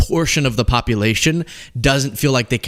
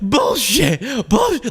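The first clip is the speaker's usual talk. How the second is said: play-acted very high, shrill screaming; 11 semitones higher than usual. Retelling someone screaming over a host introducing a topic: imitating someone screaming. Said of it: "screaming it out".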